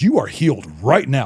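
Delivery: irritated, fed-up, angry tone. Speaker retells what a woman said while praying over her, imitating someone mad. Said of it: "Like she was mad about the whole situation".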